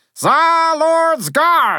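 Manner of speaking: very high, loud rallying shout. The narrator shouts to the tsar lord's guard as they sweep toward the enemy. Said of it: "I shouted".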